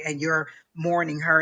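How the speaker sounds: ordinary delivery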